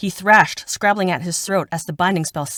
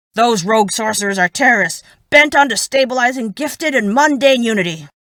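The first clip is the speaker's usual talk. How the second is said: loud, raised, barking retort; 5 semitones higher, 6 dB louder than usual. Narrator reads a captain's reply to an accusation, barking. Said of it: "[name] barked. / He glared. / [name] barked. / [name] barked".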